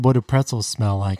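normal talking voice

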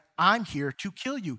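usual speaking voice

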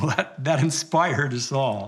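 ordinary talk, nothing marked

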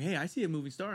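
plain

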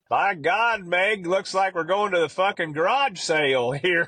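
put-on high-pitched southern Alabama accent. Retelling what Collie told Megan while shutting the pickup tailgate, in his southern Alabama voice. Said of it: "He goes in that Alabama, southern Alabama voice".

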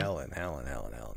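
very low, hushed, soft, mournful grieving voice. Retelling a scene where a man repeats his dead wife's name, mock-grieving voice. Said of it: "in a grieving fashion".

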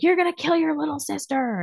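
very high, shrieking, furious scream. A mother retelling screaming at her daughter Emmeline, retelling a furious scream. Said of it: "I was screaming at Emmeline yesterday".

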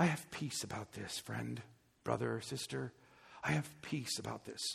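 very low, very soft, breathy, pious murmur. Mimicking people who say they have peace about something, breathy tone. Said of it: "with a breathy tone".

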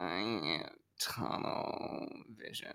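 very slow, hushed whisper, a little deep. Reading a chat message aloud as another person would: Milk Dog impression. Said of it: "my impression of Milk Dog".

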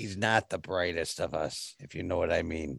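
hushed, soft, conspiratorial half-whisper. Voicing a character who glances at another and confides: half-whispering. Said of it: "he whispers at you".

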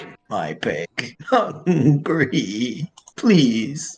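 creature voice, crying. Game master voices a creature begging for food, crying creature voice. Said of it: "It starts to cry and just says".

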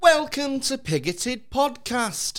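flamboyant camp voice, very high, very slow. Opening the podcast with the welcome; very camp. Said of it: "I've started very camp".

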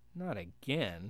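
sarcastic tone. [name] responds as Paolo freezes mid-speech again, sarcastic. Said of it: "said [name] sarcastically".

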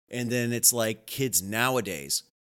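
ordinary delivery

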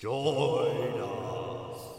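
eerie, creepy, spooky voice. A voice in a weird house calls out to two people: creepy voice. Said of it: "there's a creepy voice saying join us".

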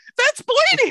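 sudden jump into very high falsetto exclamation. Speaker retells what he blurted on seeing blood: retelling a falsetto exclamation. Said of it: "I hit some falsetto level that I've never hit before".

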